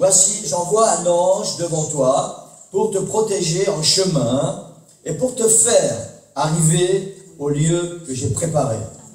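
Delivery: slow, solemn, measured recitation.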